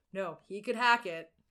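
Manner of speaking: ordinary delivery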